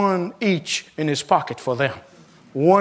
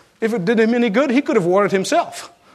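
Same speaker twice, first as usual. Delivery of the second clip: usual speaking voice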